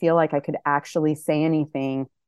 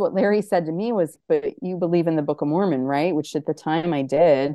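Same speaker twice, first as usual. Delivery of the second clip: ordinary talk, nothing marked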